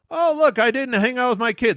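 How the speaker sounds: high, whiny, crying rich-man voice. Mocking a rich millionaire's complaints: imitating a whiny crying millionaire.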